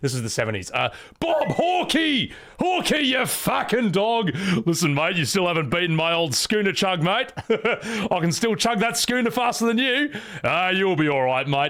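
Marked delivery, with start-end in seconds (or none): 1.2-11.7 put-on, laid-back, higher-pitched Australian accent. Acting out a character phoning the Australian prime minister: put-on Australian accent as Revolver Ocelot. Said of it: "Ocelot's actually just Australian".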